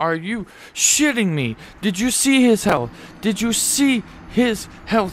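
furious outburst, very high, very loud, shrill. Gamer reacting to an enemy's health while trying to beat him, livid. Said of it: "I am fucking livid".

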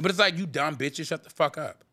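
ordinary delivery

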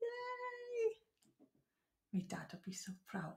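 put-on Welsh accent. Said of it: "Get your best Welsh voice on".

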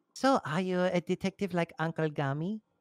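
put-on little girl voice with poor German accent. Voicing a girl character at the group's request, in a little german girl voice. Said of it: "Do you want to do a little German girl voice?".

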